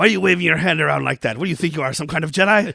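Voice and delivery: put-on alien voice. Retelling a scene from the movie under discussion: imitating Watto. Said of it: "And Watto's line is like".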